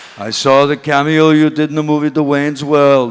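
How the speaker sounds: very loud, booming put-on Austrian accent. Retelling being asked to do a cameo in a new film, in an imitated austrian accent. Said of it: "I'll try to do his accent".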